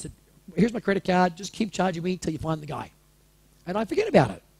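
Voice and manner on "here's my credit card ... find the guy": plain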